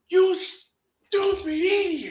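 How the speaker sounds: squeaky, very high put-on cartoon voice. Acting out an exchange from a cartoon, Ren and Stimpy cartoon voice. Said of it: "I'm bringing out my cartoon voices".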